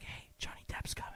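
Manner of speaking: unvoiced, hushed whisper.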